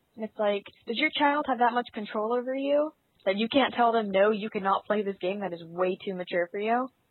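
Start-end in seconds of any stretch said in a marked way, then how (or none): none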